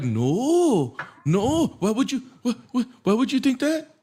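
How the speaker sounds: stumbling, sing-song, swooping, animated delivery. Retelling the other speaker's flip-flop back to them: imitating the other speaker. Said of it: "And you're like".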